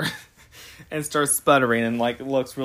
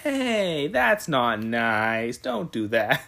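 acted, slow, light, gentle fatherly scolding; 2 semitones lower than usual. Retelling how a dad answered his daughter pointing a shotgun at him: retelling a light scolding. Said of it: "that's basically the tone he used".

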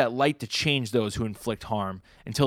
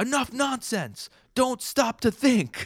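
screamed, very high and long drawn-out; 12 semitones higher than usual. Retelling a story, quoting what a very intense guy screamed: retelling a scream. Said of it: "he screams out loud".

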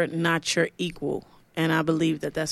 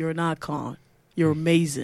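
put-on hype hip-hop voice. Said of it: "in my best [name] voice".

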